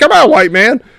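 impatient, high-pitched tone. Retelling the son waiting at a crosswalk, imitating an impatient son. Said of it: "he'd get impatient".

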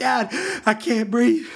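put-on frightened child voice, high and panicked. A father retells his daughter panicking to him, imitating her panic. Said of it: "now she's like panicking".

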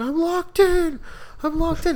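very high, frantic, panicked screaming. Recalling getting locked in a mom's friend's bathroom as a kid, retelling a scream. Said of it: "halfway climbing out and screaming".

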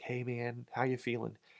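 very quiet, soft, hushed, gentle voice. Retelling asking a man after his close heart call how he feels, soft voice. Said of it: "with that soft voice".

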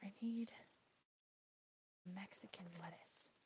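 low, slow under-the-breath mutter. Searching a script for a word, saying it low under the breath. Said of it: "low under your breath".

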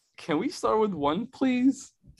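quavering voice. Retelling answering a veteran's question about warm-up weight, imitating a shaking voice. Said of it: "my voice was, like, shaking during it".

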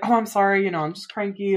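put-on dismissive, brushing-off tone. Retelling a movie character apologizing: imitating a dismissive brush-off. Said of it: "she just tries to brush it off".

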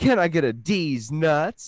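very slow, high, cool troublemaker drawl. Retelling a troublemaker kid at a party: imitating a cocky kid. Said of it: "the troublemaker, kinda, like, cool one".

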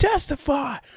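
high-pitched yelling.

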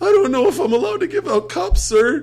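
put-on teen-sounding voice cracking very high and loud. Acting out a teenager answering a man's request for ice, in a crackly Peter Brady voice. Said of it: "with a crackly Peter Brady voice".

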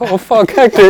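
yelled outburst, very high and loud. Retelling the moment a tent struck someone: retelling own shout. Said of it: "I was shouting".

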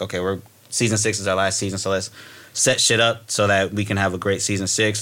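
ordinary delivery

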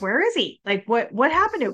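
mock panicked, frantic, freaked-out outburst. Describing a favourite scene, imitating a character freaking out. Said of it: "I love how he freaks out and is like".

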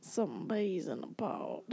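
put-on southern drawl. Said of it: "Southern drawl".

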